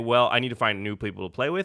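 ordinary delivery

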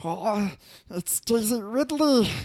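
very high, very loud, nerdy squeal. Speaker imagines how a dungeon master would react, in a Stitch voice. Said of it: "that was the Stitch voice. I was trying to go for the nerd".

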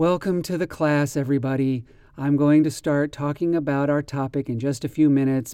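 boring, lifeless, flat monotone droning delivery. Example of somebody droning, speaking in a very flat, boring way. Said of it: "Here is an example of somebody droning".

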